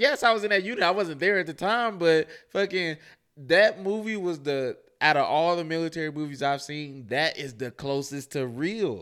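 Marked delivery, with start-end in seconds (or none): 0.0-0.8 high, loud scream. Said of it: "I was literally screaming at them like".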